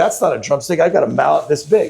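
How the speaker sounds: ordinary talk, nothing marked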